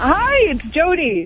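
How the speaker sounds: cheerful, upbeat, happy, high-pitched voice. Jody greets the Rock 102 show on air, sounding happy. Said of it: "You sound happy".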